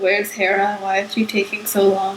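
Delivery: ordinary talk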